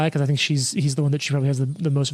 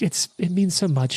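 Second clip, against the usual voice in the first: fake tearful, put-on crying tone; 3 semitones higher than usual. Storyteller voicing a woman answering him, tearfully putting it on. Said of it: "tearfully kind of putting it on".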